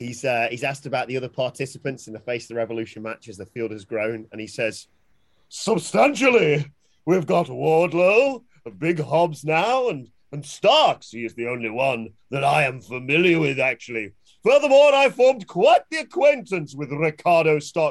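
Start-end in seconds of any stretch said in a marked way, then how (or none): 5.5-17.9 exaggerated, over-the-top put-on voice with swooping pitch. Retelling a wrestler's answer about the match field: over-the-top quoted impression. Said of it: "I'm sorry, I've got carried away there".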